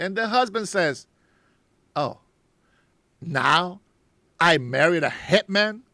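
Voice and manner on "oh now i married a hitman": very slow, put-on feminine voice. Retelling a story, speaker quotes the husband's remark in a very gayish, feminine tone. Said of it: "in a very gayish tone, in a feminine tone".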